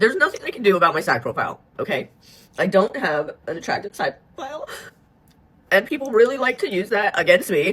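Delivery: tearful, crying speech. Speaker in their own video, unexpectedly crying while talking. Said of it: "I had zero intention of crying in this".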